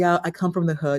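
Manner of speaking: ordinary talk, nothing marked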